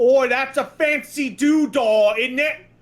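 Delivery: broad London Cockney voice. Quoting a game character reacting to a rare item: Cockney accent. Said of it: "a guy in, like, a Cockney accent".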